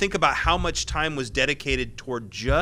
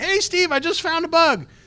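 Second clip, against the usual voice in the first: calling out really loudly, high pitch. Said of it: "really loudly".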